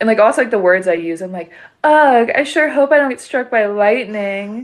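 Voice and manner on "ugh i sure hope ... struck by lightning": full exaggerated valley girl voice, pitched high. Quoting own recorded intro line: valley girl Benjamin Franklin voice. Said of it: "I kinda sound like a little bit of a valley girl".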